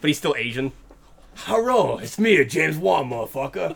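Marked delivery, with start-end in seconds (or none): 1.4-3.8 slow, deliberate gym-bro voice. Joking that a film director got huge on steroids: James Wan as a jacked gym bro. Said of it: "He's super jacked".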